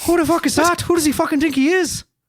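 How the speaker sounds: put-on Irish accent, put on, pitched way up. Imagining how the conversation about Jeff the Mongoose would have sounded: Irish accent. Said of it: "That's a good Irish accent".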